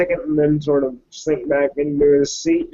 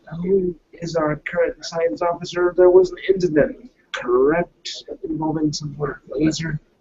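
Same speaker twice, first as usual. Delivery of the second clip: in a whisper. Voicing a character who looks over at another crew member: whispering. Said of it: "and just kind of whispers".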